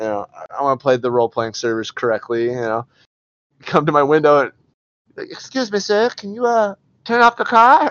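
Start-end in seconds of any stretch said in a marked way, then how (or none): 5.3-7.9 put-on squeaky, very high, twelve-year-old child voice. Retelling being pulled over by a 12-year-old on a role-play server, imitating a 12-year-old kid. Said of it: "this kid's 12 years old and he pulled me over".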